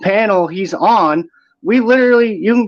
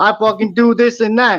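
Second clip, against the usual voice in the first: put-on tough street-talk voice; 2 semitones higher than usual. Retelling how Eli talked on a channel of street dudes: imitating Eli's street-dude talk. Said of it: "he starts talking like this".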